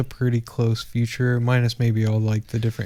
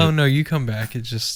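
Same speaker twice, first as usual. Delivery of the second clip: ordinary talk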